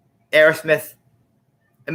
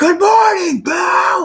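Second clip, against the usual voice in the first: high, loud screaming of many voices. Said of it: "And the crowd goes".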